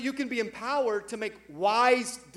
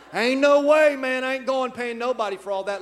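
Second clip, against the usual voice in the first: put-on deep southern drawl, louder; 4 semitones lower than usual. Retelling how he once spoke to someone, he puts on an exaggerated accent, refusing to pay for the whole thing, imitating a deep southern accent. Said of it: "The people in Maryland are like".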